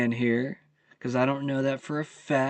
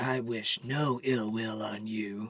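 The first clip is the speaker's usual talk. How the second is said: deep, dark, hushed, slow would-be scary voice; 3 semitones lower, 6 dB quieter than usual. Mocking a man's claim of goodwill toward his critics, in a mock deep, dark scary voice. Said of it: "Says it with a deep, dark voice, trying to be all scary".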